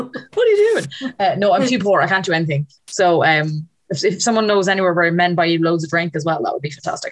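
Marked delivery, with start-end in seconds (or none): 0.0-1.1 high-pitched, slow, mock bewildered voice. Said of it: "and I'm like".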